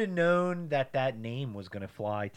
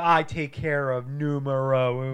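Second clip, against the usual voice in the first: ordinary delivery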